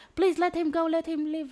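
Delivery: shrill, very high, loud desperate shriek. Retelling a story where a woman begs captors to spare a man, retelling a screaming plea. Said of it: "She's screaming like".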